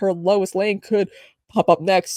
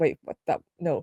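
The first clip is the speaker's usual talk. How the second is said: usual speaking voice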